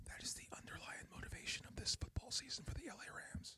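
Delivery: breathy, hushed whisper, very quiet, barely audible. Talking football, something he can't say out loud, whispered. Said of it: "Let me whisper this".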